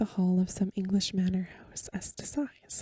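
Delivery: ordinary delivery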